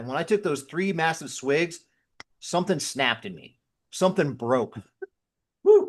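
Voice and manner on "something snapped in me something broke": voice catching, a little choked up. Telling listeners a personal story about their past, a little choked up. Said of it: "Get a little choked up talking about it".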